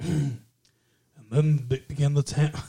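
soothing, rich narrator voice. Attempting a calm, rich narrator voice, then giving up: failed Morgan Freeman impression. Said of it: "he's more like".

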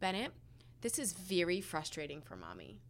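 soft, forced calm voice. Mother retelling what she said to Bennett in the car: retelling speaking as calmly as possible. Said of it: "in the most calm voice I could".

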